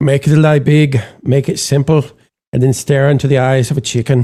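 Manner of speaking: put-on slow, unhurried delivery in an Irish accent. Quoting a line in a Werner Herzog voice: Irish-sounding Werner Herzog impression. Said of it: "How did Werner Herzog become Irish?".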